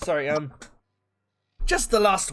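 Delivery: put-on unplanned slide into a Scottish accent. Voicing a character reading a paper, slipping into a Scottish accent. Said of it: "I started doing an accent".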